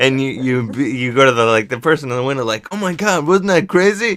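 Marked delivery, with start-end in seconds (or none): 2.7-4.2 very high-pitched, faked shocked freak-out. Distracting the person in the window while a friend runs off, feigned freak-out. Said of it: "you freak out".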